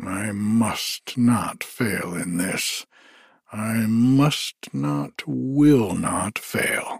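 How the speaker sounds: muttered to himself under breath. A narrator reads Thor talking to himself beside Tyr; muttered to himself. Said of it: "Thor muttered".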